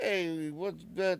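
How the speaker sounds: put-on New York accent. Explaining how people talk in different places, stereotypical New York accent. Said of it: "If you're in New York, people are like".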